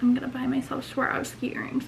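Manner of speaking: soft, unvoiced whisper. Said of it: "I was like".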